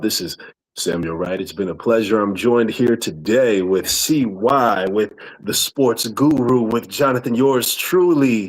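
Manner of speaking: radio announcer voice, on-air host delivery. Giving one last shout-out and naming who joined him, in a radio voice. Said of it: "Radio voice".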